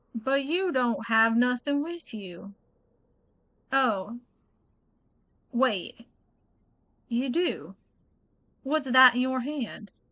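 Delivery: slow, drawn-out, put-on Southern character drawl. Voicing a game character who questions a student: Southern accent for a character. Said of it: "really hard doing the Southern accent with him".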